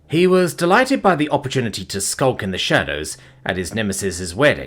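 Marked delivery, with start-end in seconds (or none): none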